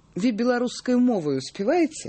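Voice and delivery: plain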